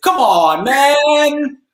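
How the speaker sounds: man drawn out, very high and loud. Predicting a phrase that will be uttered, speaker does a Biden impression. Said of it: "That was my best Biden impression".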